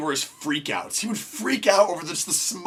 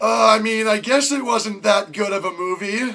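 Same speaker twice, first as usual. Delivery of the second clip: mock uneasy, slow, awkward, halting hesitant hedging; 3 semitones higher, 4 dB louder than usual. Retelling sitting in the front seat beside a dad who was freaking out, mock-awkward. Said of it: "how awkward this is for me".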